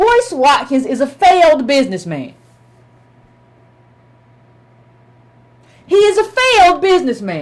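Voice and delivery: very slow, deliberate, drawn-out, spelled-out delivery. Addressing an audience directly, slowing down to make a point, slow delivery. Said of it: "I'm gonna slow down and tell you".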